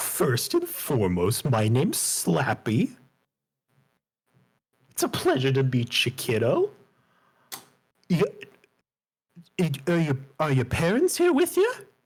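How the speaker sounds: animated, swooping, sing-song clown-butler character voice. Voicing a clown in a butler's tuxedo greeting a player: clown character voice. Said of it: "He says".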